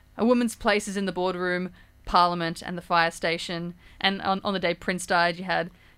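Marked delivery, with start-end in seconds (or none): none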